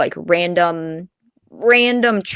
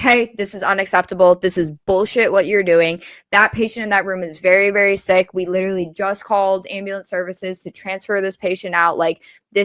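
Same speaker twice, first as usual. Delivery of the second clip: ordinary talk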